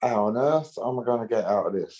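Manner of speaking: plain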